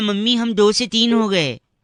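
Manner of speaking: ordinary delivery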